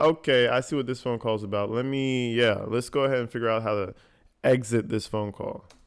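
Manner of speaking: normal talking voice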